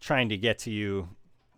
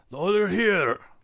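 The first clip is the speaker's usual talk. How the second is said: very high, startled ogre shout; 10 semitones higher, 4 dB louder than usual. Narrating a fight as the ogre surprised by Silverado, ogre yelling out. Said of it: "the ogre kind of yells out".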